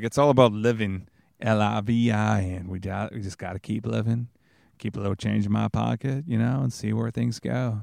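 horrible, clumsy put-on movie-star impression. Rambling about leaving politics behind: horrible Matthew McConaughey impression. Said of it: "my horrible Matthew McConaughey impression".

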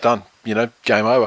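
ordinary talk

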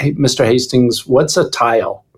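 normal talking voice

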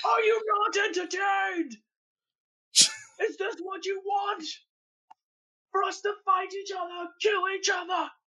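mock emotional delivery. Acting out Tony addressing the crowd after a fight: put-on emotional speech. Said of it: "it would be really emotional".

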